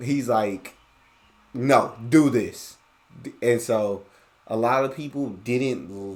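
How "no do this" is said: put-on blunt, direct, curt tone, louder. Retelling how the brother corrected teammates: imitating brother's blunt, direct order. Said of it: "he wasn't gonna let you know in the nicest tone".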